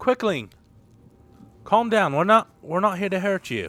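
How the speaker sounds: high put-on British accent. Playing a character, calming a Quickling in a put-on British accent. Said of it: "I put on this British accent just for the Quickling".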